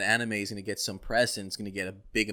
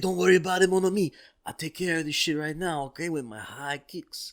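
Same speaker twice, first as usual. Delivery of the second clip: put-on French accent, a bit higher pitched; 7 semitones higher than usual. Joking about Van Damme playing an American soldier as Guile; Jean-Claude Van Damme impression. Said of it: "with that fucking French accent".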